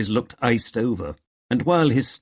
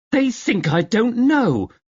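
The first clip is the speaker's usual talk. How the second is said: very high, bursting, indignant outburst; 12 semitones higher, 4 dB louder than usual. A woman, after a rumour is mentioned, bursts out: exploding. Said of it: "Doris fairly exploded".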